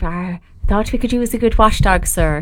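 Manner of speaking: put-on woman's voice. Talking about the number 666, a speaker does a woman from The Omen impression. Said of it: "That's my impression of a woman from The Omen".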